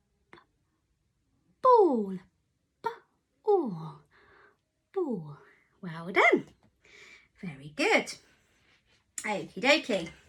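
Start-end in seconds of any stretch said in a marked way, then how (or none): 0.3-4.0 whispering. Showing children how to whisper a word and hear its first sound: whispering. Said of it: "Can you whisper ball".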